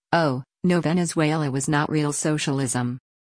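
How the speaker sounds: ordinary delivery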